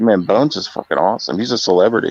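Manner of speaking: plain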